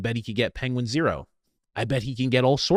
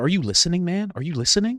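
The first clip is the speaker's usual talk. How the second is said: high, annoyed, insistent, getting mad, repeated; 7 semitones higher than usual. Retelling how the host got mad at his co-host: imitating Joe Rogan getting mad. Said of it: "he would get mad at Red Band".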